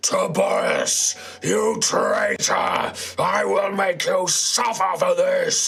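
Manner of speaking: very high, slow, drawn-out booming dragon bellow. Charging towards the Pharos, call out to Tobias across the town in a bellowing draconic voice. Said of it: "this bellowing draconic voice".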